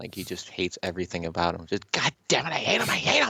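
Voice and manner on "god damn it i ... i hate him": very high-pitched cartoon character voice. Imitating Cartman ranting about someone he hates: Cartman voice. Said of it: "You sound like Cartman".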